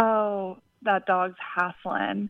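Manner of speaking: put-on North Carolina Southern accent. Speaker quoting a woman's habitual saying about a panting dog, in her Southern accent. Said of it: "in her Southern accent".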